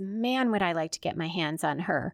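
ordinary talk

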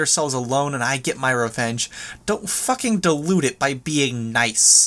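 plain reading voice

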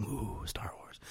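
slow, hushed whisper full of awe.

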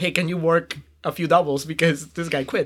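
ordinary talk, nothing marked

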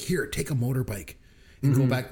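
ordinary talk

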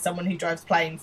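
usual speaking voice

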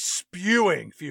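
stress on spewing, drawn out slowly.

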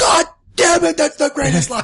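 furious drill-sergeant rant, pitched way up, high. Quoting the drill sergeant's line to Gump, imitating an angry drill sergeant. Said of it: "I just love how angry that guy sounds".

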